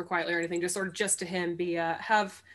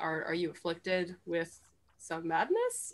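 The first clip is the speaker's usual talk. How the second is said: grave, earnest, quiet, solemn tone; 5 dB quieter than usual. Playing a character approaching Tarook, asking him solemnly. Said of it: "sort of solemnly".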